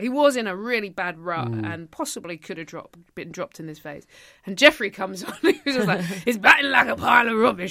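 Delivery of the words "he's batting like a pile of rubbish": put-on loud Yorkshire accent. Recalling what Jeffrey said about someone's batting: Jeffrey Yorkshire accent impression. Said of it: "I haven't got a good Yorkshire accent".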